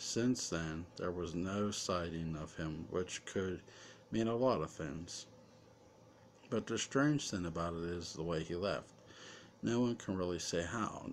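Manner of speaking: ordinary delivery, nothing marked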